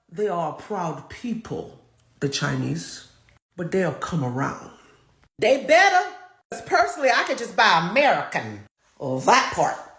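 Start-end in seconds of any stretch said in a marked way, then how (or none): 0.2-4.7 mobster voice, very low and murmured. Retell what Trump said about the Chinese in negotiations, in a mob voice. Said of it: "like in a mob voice".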